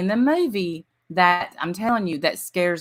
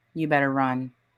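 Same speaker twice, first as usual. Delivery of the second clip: mock deadpan, flat, with no feeling at all; 5 semitones lower than usual. Retelling a movie scene where she warns a kid: imitating a flat line, no emotion. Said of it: "with no emotion".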